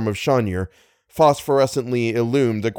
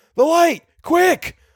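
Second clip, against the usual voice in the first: very high-pitched, almost screaming; 3 dB louder than usual. Reading Little's words to Algernon as the engine roars, almost screaming. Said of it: "Little almost screamed the words".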